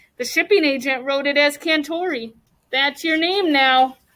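ordinary delivery

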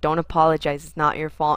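mock-stern police officer voice. Speaker retells what a police officer said at work, mock-stern police officer voice. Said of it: "like the sternest voice possible".

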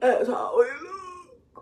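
mock wailing cry, high, slow, loud.

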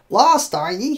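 cackling, taunting tone. A stooped old man at a mossy door answers a lost peddler, cackling. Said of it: "he cackled".

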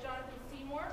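plain

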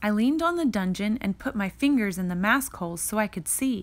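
plain

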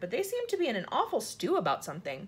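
plain

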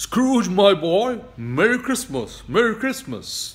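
very loud, jovial, booming, high-pitched voice. Narrator reads as Mr. Fezziwig greets young Scrooge: booming Mr. Fezziwig voice. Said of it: "said in a booming voice".

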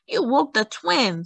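high, reproachful, scolding voice. A neighbor complains to Dalia after the rooster crows, scolding. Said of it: "scolded Senora Soledad".

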